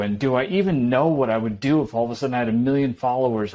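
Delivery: plain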